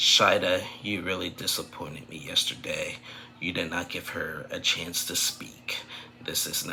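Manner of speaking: calm, quiet, even, composed voice. Recapping a show episode, speaking as Bilal to Shida in a calm voice. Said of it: "in a calm voice".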